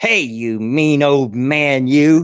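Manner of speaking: put-on loud small kid's little boy voice. Retelling a boy calling out to them in the yard, imitating a little boy's voice. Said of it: "this little boy voice saying".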